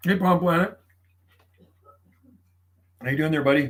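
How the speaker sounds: talking with mouth full of food. Greeting someone as buddy while eating dinner, talking while eating. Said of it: "I'm eating my dinner right now".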